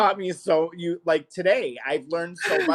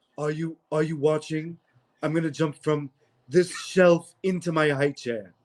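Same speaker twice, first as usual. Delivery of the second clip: put-on slurred, sloshed, drunken-sounding speech. Speaker describing a favorite bit, imitating drunk Stewie. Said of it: "when Stewie is drunk".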